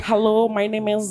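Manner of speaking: put-on American accent. Teasing someone who now has an American accent when speaking, do a put-on American accent. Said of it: "t'as un accent américain là".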